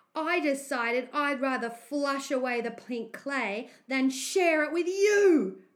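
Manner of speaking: very loud, proud delivery. A boy comes out of the bathroom and tells another boy: announcing proudly. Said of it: "Brandon announced proudly".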